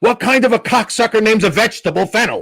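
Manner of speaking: sudden, abrupt, high-pitched, loud scream. At the Friars Club table, a man suddenly yells: retelling a sudden loud scream. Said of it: "really loud, without changing his face, he screams".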